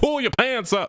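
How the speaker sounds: very high-pitched put-on voice. Retelling a scene where an AI assistant talks back: Bill Cosby voice. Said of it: "Bill Cosby's like".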